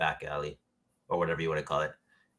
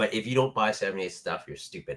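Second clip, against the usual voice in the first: normal talking voice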